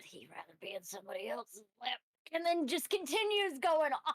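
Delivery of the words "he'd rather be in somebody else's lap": very low, very quiet under-the-breath grumble. Voicing a character grumbling to herself: muttering under her breath. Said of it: "muttering under her breath".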